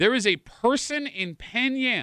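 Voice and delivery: slow, word-by-word pace. Repeating a point to the group a second time; speaking slower. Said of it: "I'm going to say that again a little bit slower".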